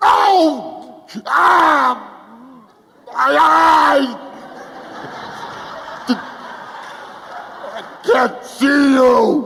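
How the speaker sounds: very high, stretched-out, drawn-out pained cries. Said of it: "give me a nice ow".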